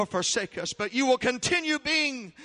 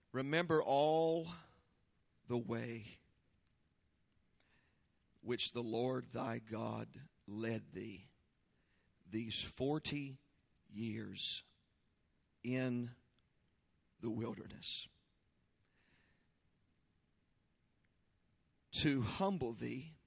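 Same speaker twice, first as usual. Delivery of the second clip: reading aloud very slowly; 11 semitones lower, 16 dB quieter than usual. A preacher reads a Bible verse aloud to the congregation: reading very slowly. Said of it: "I'm reading this slow for a reason".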